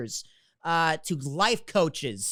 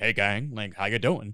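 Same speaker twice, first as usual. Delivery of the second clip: very low, deep, easy, casual delivery; 8 semitones lower than usual. Imitating the first person who hired him: low-voiced Neil Saint Clair impression. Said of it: "he talks very low".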